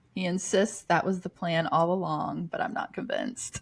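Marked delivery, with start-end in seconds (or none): none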